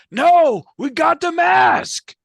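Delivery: shrill, very loud, high screaming. A game narrator voices a character who mistakes his brother for someone else: screaming. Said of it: "So he screams".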